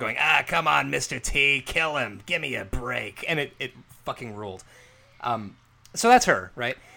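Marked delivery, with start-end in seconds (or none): 0.2-3.2 put-on boozy slurred drawl. Retelling a wrestling commentator's call: imitating Susan Saint James like a vodka aunt. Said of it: "who sounds like your vodka aunt".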